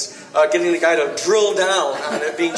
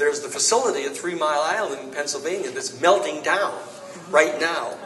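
ordinary talk

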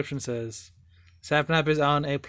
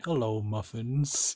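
put-on suave voice, pitched lower; 3 semitones lower than usual. Retelling a moment from a recent video, doing BadBoyHalo's put-on suave voice. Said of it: "He's like trying to do like a suave voice".

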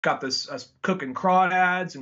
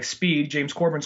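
ordinary delivery

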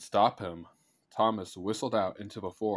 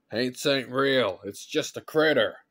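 loud, raised shout; 4 semitones higher, 6 dB louder than usual. Narrator reads a boy answering his frightened friend in the brush, shouting. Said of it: "Thomas shouted".

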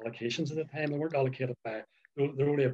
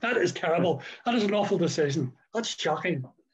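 continuous put-on yelling, shouted; 5 semitones higher, 5 dB louder than usual. Retelling a man on the sideline shouting at the referee: imitating a man shouting. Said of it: "but he was shouting".

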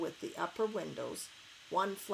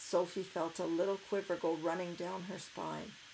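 ordinary delivery

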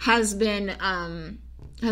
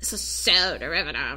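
low, snotty, stuck-up put-on valley girl voice; 5 semitones lower than usual. Speaker acts out her past self reacting to the books, valley girl voice. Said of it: "I sound like a valley girl".

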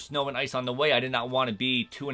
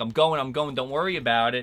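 normal talking voice

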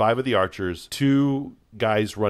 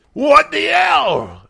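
very high, very loud, ragged, rasping wounded shriek; 10 dB louder than usual. Voicing an injured captain looking up after an arrow hit: injured captain. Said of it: "the captain, not dead, but injured, looks up and says".

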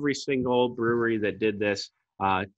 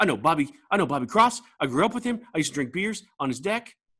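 excitable put-on voice, pitched higher; 6 semitones higher than usual. Imitating an excitable acquaintance meeting someone: Steve Seitner impression. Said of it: "That's, that's him".

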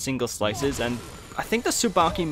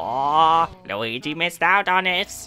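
exaggerated Italian accent; 3 semitones higher than usual. Commentating a game after a gold rank; Luigi voice. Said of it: "doing the Luigi voice there".

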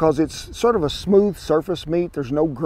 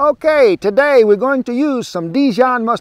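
high, put-on Italian accent; 7 semitones higher, 8 dB louder than usual. Rephrasing a line about the mustard for another speaker: put-on italian accent. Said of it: "That's, like, Italian".

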